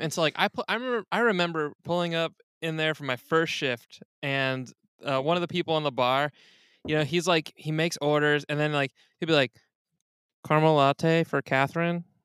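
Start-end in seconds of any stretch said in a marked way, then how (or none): 10.5-12.0 underplayed, low-key calling-out voice. Retelling a bar worker calling out a drink order: imitating someone speaking super quietly. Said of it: "super quietly".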